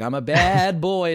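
put-on babyish voice, drawn out. Describing Abbott and Costello films, imitating Lou Costello's high-pitched baby voice. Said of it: "Costello talking in this high-pitched baby voice".

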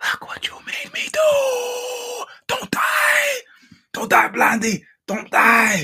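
hushed whisper. Show host signing off while the kids are sleeping, whispering. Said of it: "so I got to whisper".

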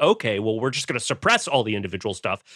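ordinary delivery

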